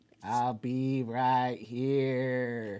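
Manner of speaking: very slow, stretched-out movie-alien voice. Touching fingers with another speaker while pointing where to vote: E.T. voice. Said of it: "I'm doing an E T voice".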